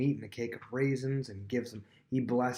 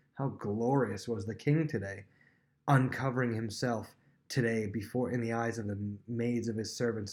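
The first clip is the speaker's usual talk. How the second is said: ordinary delivery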